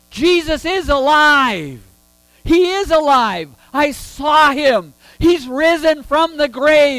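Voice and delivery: high, loud, slow, excited voice. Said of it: "in her excitement".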